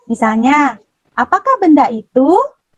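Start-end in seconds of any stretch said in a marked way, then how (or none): 1.1-2.3 pitch rising on the last syllable of itu. Teaching how question words change intonation, rising on itu. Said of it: "Jadi naik ya nadanya".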